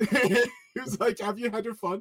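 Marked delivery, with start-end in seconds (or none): 1.2-2.0 put-on heavy German accent, laid on thick, pitched up. Retelling what an annoyed father turned around and said, in a thick German accent. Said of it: "In a thick German accent".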